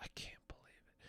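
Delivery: mock under-the-breath mutter. Retelling what the lady on the phone said: imitating muttering under her breath. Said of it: "under her breath".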